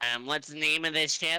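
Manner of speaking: very nasal voice. Narrator voicing a functionary who follows the crew aboard, incredibly nasally voice. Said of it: "he says in an incredibly nasally voice".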